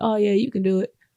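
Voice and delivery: half-hearted, doubtful, unconvinced tone. Imitating people whose encouragement sounds unconvinced: imitating a doubtful tone. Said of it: "they say it in a tone that's just like".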